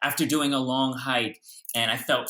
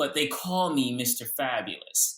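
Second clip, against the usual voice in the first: ordinary talk, nothing marked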